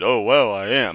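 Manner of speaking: mock, loud, very slow, drawn-out, thrilled kid voice. Imitating a kid who sounds so excited: imitating an excited kid. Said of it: "the kid sounds so excited".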